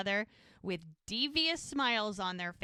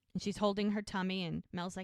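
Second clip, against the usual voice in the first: ordinary talk, nothing marked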